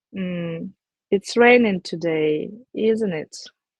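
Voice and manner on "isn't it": pitch falling at the end of isn't it. Demonstrating question tags, falling pitch on "isn't it". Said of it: "something like falling intonation".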